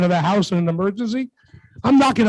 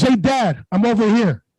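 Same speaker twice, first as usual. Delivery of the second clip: slow, hard, tough-guy voice. Retelling a kid's reply after being caught by Dad: imitating a tough voice. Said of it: "With a tough voice".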